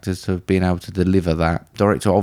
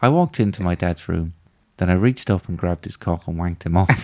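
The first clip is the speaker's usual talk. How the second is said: mock-deadpan delivery. Recounting a line a man delivered while they watched, retelling a deadpan line. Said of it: "He delivered it so deadpan".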